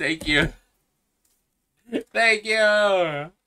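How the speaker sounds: tearful voice, high and swooping, near tears. Thanking someone for a $50 gift, about to cry. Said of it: "I'm gonna cry".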